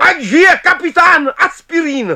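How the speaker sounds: very high, booming, thundering shout. Forbes answers the toast among the tramps, thundering. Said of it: "Zahřměl Forbes".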